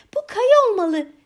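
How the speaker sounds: very high, shrill voice trembling with excitement. Gerda finds the prince's red bed in the palace: voice trembling with excitement. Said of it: "heyecandan titreyen bir sesle".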